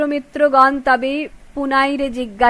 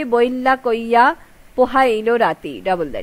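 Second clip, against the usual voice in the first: ordinary delivery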